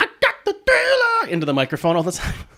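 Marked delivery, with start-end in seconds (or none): 0.0-1.3 squeaked out high and slow. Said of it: "my terrible [name] impression".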